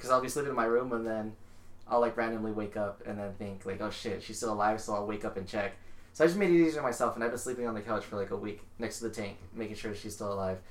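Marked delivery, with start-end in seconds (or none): none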